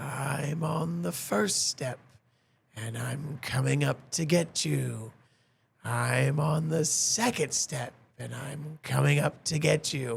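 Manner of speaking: very slow, long, drawn-out raspy drawl. Telling a ghost story, voicing a refrain heard late at night in a drawn-out raspy voice. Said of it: "In this very, very droll, kind of lengthy, raspy voice".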